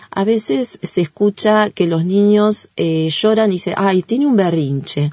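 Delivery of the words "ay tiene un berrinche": plain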